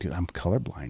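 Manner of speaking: quiet, close half-whisper. Retelling words someone said into their ear: imitating a half-whisper. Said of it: "whispered in my ear".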